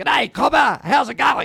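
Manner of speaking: put-on Australian accent. Retelling how someone plonked down in a booth: imitating an Australian accent. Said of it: "diatribe of speaking Australian".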